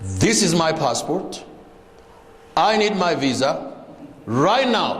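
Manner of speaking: forceful, very slow, deliberate, assertive delivery. Asking for a visa in Kenya, passport in hand: firm, assertive tone. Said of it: "You have to be very assertive".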